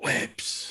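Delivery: soft, unvoiced whisper.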